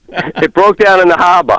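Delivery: Boston-accented speech. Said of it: "Can you tell Davis Maddock that".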